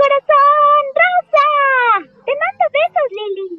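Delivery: rosa said very high and stretched out. Sending kisses to Lili: Sailor Chibi Moon voice. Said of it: "te voy a mandar besitos con Sailor Chibi Moon".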